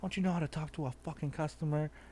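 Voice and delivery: acted-out angry, ranting outburst. Retelling a customer's complaint: imitating someone going off angrily. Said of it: "she just starts going off like".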